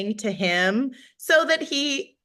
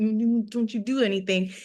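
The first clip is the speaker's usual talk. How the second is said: speaking through the teeth. Retelling a warning given at the table: talking through teeth. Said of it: "talking through my teeth".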